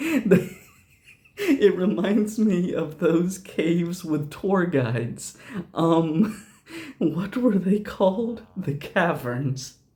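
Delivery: giggling through the words. Reading a game character's line for the first time, laughing while reading. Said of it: "Got laughing so hard I got choked up".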